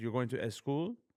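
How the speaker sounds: put-on Persian accent on English. Act out your mom repeating your words about going to school, imitating mom's persian accent. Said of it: "Persian people, m- the accent that we have".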